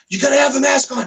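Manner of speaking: play-acted high, shrill, flipping-out yell. Recounting a girl screaming at them in a food shop, the speaker imitates her yelling. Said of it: "like yelling".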